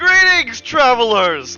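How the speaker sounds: booming jubilant voice. A figure turns to greet the small group, booming jubilant voice. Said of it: "The voice booms in a very jubilant tone".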